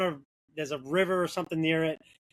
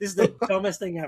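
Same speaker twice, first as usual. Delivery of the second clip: put-on angry, pissed-off voice; 2 semitones higher than usual. Retelling own words while stuck backing up a trailer: imitating own angry words. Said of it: "I was so pissed".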